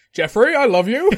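put-on alien invader voice. Imitating a wrestler greeting Jeffrey: imitating his alien invader voice. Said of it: "Doing his alien invader voice".

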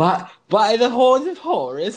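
high, slow, laughing, bad fake Irish accent.

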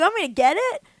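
high, cartoonish voice like colliding skateboards. Retelling what a man asked the speaker; voice like two skateboards colliding. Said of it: "he sounded like two like skateboards came together".

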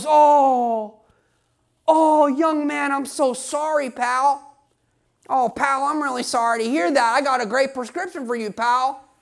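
put-on devil voice. Describing how the devil tempts a young athlete, imitating the devil. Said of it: "He goes".

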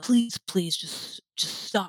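acted-out begging and pleading. Recounting being choked, acting out their past self begging her to stop. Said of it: "just begging".

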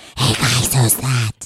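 put-on gremlin-like loud whisper. Retelling how a cousin whispered in public: imitating a bad loud whisper. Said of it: "What was that voice? ... some gremlin voice".

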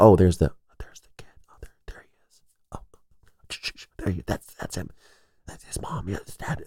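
imitated whisper. Recalling how people reacted when he walked into a store, imitating people whispering. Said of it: "like they're doing the whispering".

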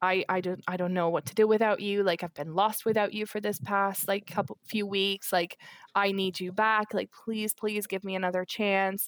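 put-on desperate pleading voice. Recounting how he begged to get back together; imitating him pleading. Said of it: "he's begging me to get back together".

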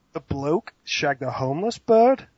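horrible American accent attempt. Reading a typed phrase on request: bad attempted American accent. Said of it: "You gotta say it in your American accent".

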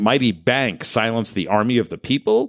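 normal talking voice

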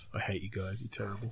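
muttered under breath. Retelling what he said while cheering at the recording: muttered under breath. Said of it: "Under my breath".

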